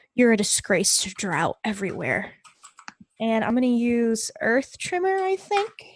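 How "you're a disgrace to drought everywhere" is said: words ground out as a growl. A player's character responds to another person, speaking with a growl in the voice. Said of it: "with a growl in my tone".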